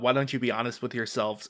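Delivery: ordinary delivery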